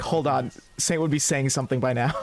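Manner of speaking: plain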